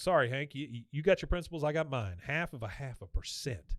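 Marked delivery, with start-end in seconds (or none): none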